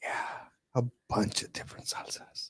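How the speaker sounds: very quiet, breathy, secretive whisper. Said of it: "He starts whispering to me".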